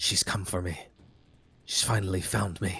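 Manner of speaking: words hissed out. Voicing a disguised character hissing to the players' characters, hissing. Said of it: "he sort of hisses to you".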